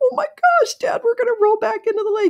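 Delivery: put-on squealing at a very high pitch, girlish. Recalling her dad teaching her to drive, retelling her squeal. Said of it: "I'm squealing like a girl".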